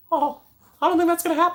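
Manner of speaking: very high cartoon mouse voice. Acting out Mickey turning down his cousin's restaurant deal: Mickey Mouse voice. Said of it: "using the Mickey voice".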